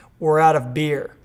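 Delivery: normal talking voice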